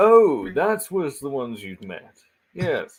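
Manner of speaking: put-on lordly tone. Playing a character in an acted scene: noble voice. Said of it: "George is purposefully doing his noble voice".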